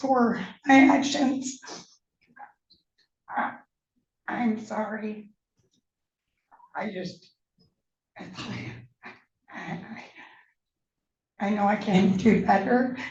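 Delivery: halting, stammered speech, struggling for words. Asked if he has anything to say while facing serious charges, struggling to get words out. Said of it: "I'm having a hard time talking".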